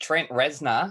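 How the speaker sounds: broad, laid-on, rough Australian accent. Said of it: "there you go, in a Bogan accent".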